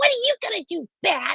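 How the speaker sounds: tiny, very high-pitched, squeaky cartoon voice. Describing how a character sounds in their head while reading: little squeaky voice. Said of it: "her little squeaky voice".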